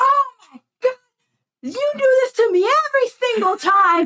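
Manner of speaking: high, furious, mock raging screaming. Retelling an angry customer's complaint about his order: imitating a furious customer screaming. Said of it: "screaming at the top of his lungs".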